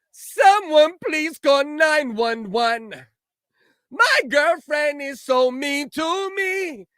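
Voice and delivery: mock wailing, high, slow and loud.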